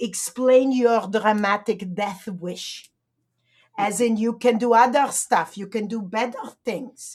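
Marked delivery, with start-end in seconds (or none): 0.0-2.9 put-on French accent. Recapping Monique's message, the speaker quotes her line, imitating Monique's French accent. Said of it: "she said in her French accent".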